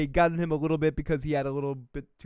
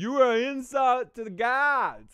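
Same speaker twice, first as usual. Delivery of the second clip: play-acted drunk voice, high, "gods" drawn out; 9 semitones higher, 4 dB louder than usual. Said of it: "who's drunk as fuck".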